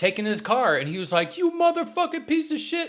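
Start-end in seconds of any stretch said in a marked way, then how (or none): 1.4-2.9 very high-pitched, angry shouting yell. Retelling a car owner yelling at a tow truck driver: imitating a man yelling. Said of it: "this dude was yelling at this tow truck driver".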